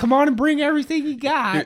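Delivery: mock thrilled, ecstatic, very high-pitched voice. Retelling how mom invited them home after faster internet: imitating an ecstatic mom. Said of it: "My mom is just ecstatic".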